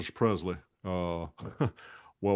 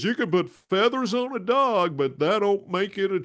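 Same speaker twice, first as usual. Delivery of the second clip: cartoon rooster voice, pitched way up high; 12 semitones higher, 6 dB louder than usual. Quoting one of his sayings to someone who compares the voice with a TV doctor's, do a Foghorn Leghorn impression. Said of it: "where he says".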